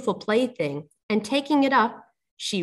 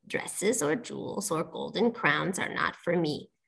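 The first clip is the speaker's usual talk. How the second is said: soft, whispered, hushed, breathy frog voice; 4 semitones lower, 7 dB quieter than usual. Narrator reading a fairy tale, giving the frog's answer to her in a frog voice. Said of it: "answered the frog".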